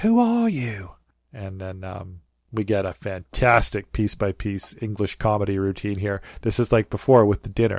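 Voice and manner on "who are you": put-on little kid voice, much higher, slower. Recapping a comedy scene, quoting a character's question: little kid voice. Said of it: "in his clearly little kid voice asks".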